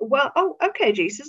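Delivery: put-on sarcastic voice. Retelling the disciples answering Jesus about feeding the crowd: imitating sarcastic disciples. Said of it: "it's quite sarcastic".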